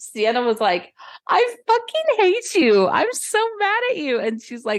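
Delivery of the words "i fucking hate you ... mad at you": put-on giggly drunk fake fury, higher. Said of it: "laughing with each other".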